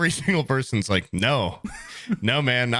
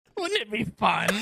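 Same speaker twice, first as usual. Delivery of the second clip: very high-pitched put-on voice; 9 semitones higher than usual. Voicing the mask a friend saw in his tequila shot: Green Goblin voice. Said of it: "so you started to hear the voice".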